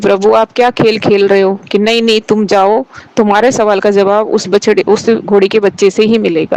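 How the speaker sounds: plain reading voice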